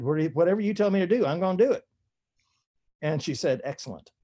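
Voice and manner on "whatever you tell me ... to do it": put-on Texas accent, higher. A writer retells his reply to the woman who asked, put-on texas accent. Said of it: "I put on my very best Texas accent".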